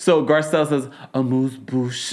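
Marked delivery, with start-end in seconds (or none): 1.1-2.1 put-on sultry, sexy delivery. Retelling a reality show moment, imitating a sexy delivery. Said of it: "you said that all sexy".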